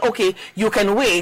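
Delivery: ordinary delivery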